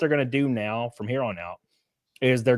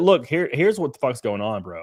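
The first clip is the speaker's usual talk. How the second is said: ordinary talk, nothing marked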